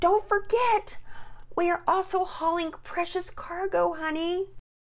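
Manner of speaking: very high, urgent, impassioned pleading voice. Reading a story, Mama pleads with Daddy on a trip, voice up an octave. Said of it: "Her voice seemed to go up an octave".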